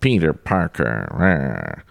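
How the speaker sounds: pinched, held-nose nasal voice. Retelling a film scene, quoting a character's line in a nasal voice. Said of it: "did I do that nasal enough?".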